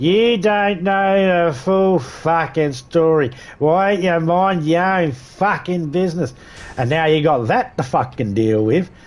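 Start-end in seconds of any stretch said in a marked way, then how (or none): 0.0-6.3 slow, play-acted mouthy drunk with attitude. Imitating a drunk person telling off someone who interfered: imitating a drunk's attitude voice. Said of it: "in their drunky poo fucking attitude voice".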